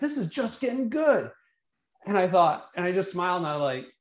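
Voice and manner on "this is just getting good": mock screamed, high, pitched-up exclamation. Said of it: "he screams".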